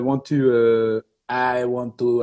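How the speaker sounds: slow, put-on French-Canadian accent in English. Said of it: "I'm trying to get the accent again".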